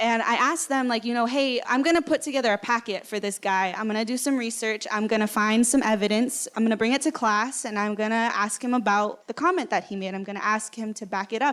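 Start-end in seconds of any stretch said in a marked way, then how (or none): none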